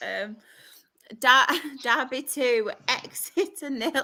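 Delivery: very slow, suppressing laughter, stifled giggles. Reading out a football score while still having the giggles, trying not to laugh. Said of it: "are you trying not to laugh?".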